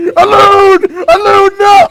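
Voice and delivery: mock desperate yelling.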